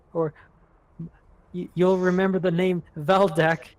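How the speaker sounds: holding back tears. Storyteller voicing a character as he walks away, holding back tears. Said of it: "like he's trying not to cry".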